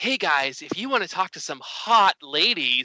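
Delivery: put-on sultry, seductive woman's come-on voice. Retelling the voice that answered when he called up, in a sexy lady voice. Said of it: "sexy lady voice that was like".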